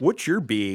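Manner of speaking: extreme put-on Wisconsin accent. Showing listeners the extremes of regional speech to get rid of, in an exaggerated Wisconsin accent. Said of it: "when you're in Wisconsin and you say".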